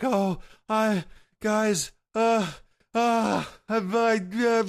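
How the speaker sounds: mock very high, drawn-out, tearful joyful sobbing. Retelling how Caribou ran up to the group, imitating Caribou sobbing with joy. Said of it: "sobbing like tears of joy".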